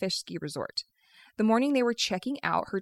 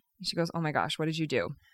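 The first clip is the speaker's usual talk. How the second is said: ordinary talk, nothing marked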